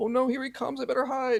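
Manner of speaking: put-on, very high, cowering scared voice. Imitating a rival who cowers and hides from the speaker: imitating someone cowering in fear. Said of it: "cowers and tries to get off camera".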